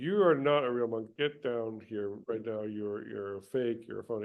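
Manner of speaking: ordinary talk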